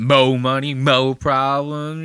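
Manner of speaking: overstressed, try-hard cool delivery with heavy emphasis. Mocking people who say a lyric trying to sound cool: imitating put-on emphasis. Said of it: "They start throwing an emphasis on it".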